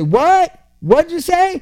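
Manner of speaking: put-on old man voice, loud, high and shouted. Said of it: "and he'd say".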